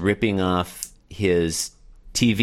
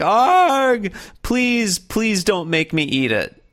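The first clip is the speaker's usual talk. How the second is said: put-on cartoon sobbing, much higher, slower; 14 semitones higher, 4 dB louder than usual. Retelling a comic, Garfield on his knees with hands clasped: imitating Garfield crying. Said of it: "and he's crying".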